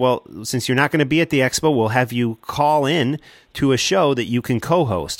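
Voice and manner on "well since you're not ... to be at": plain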